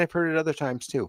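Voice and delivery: ordinary talk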